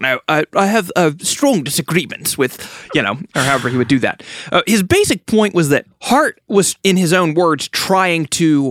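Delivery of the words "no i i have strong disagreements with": understated, restrained put-on British accent. Imitating a scholar's scathing review: understated British N T Wright impression. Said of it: "in the understated British way".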